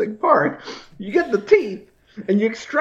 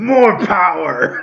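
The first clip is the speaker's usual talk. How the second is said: swashbuckling put-on pirate voice; 3 semitones lower than usual. Riffing on the Tooth Fairy, the speaker says this in a pirate voice. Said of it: "Sound like a pirate".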